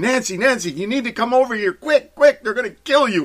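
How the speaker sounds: very high, loud, shrieking scream. Retelling a boyfriend's warning to his girlfriend: imitating someone screaming.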